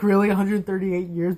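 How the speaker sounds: ordinary talk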